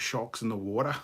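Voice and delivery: put-on Australian accent. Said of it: "Australians ... it's just like".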